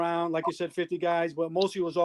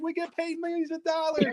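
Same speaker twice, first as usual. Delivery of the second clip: furious scream, pitched higher; 11 semitones higher than usual. Retelling how the host threw them out: imitating Downtown Julie Brown screaming. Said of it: "she was screaming, yelling".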